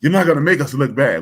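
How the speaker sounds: loud, high-pitched yelling. Recalling school, the speaker quotes the principal scolding the class: retelling Mr. Spellman's yell. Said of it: "one day he yelled at us".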